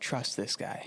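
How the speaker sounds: soft whispered voice. Storyteller voices the king turning to the listener and speaking in his ear: whisper. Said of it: "he whispers in your ear".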